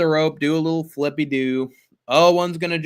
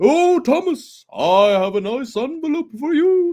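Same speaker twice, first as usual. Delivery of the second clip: cartoon character voice, pitched much higher; 11 semitones higher than usual. Asked to do an impression of a cartoon postman, Postman Pat impression. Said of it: "Do an impression of Postman Pat".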